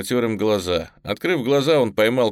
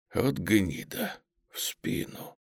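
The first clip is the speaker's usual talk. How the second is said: faint, hushed, breathy whisper, very slow; 10 dB quieter than usual. Krutov, shot in the back and sinking into the snow: whispered. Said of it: "Крутов прошептал".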